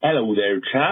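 put-on regional British accent. A listener leaving a voicemail greets the hosts in a put-on regional British accent. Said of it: "I thought I'd just do a little accent there for you, a little regional accent from the UK".

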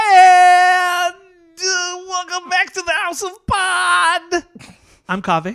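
upbeat, lively host voice, very high and loud. Podcast host welcoming listeners back to the show, lively upbeat intro. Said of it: "That is more like it".

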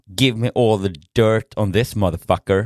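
ordinary delivery

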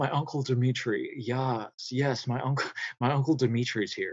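sultry little voice, soft and slow. Describing her uncle's voice, imitate him: Uncle Dimitri's sultry voice. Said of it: "He just has this really sultry little".

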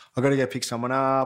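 ordinary talk

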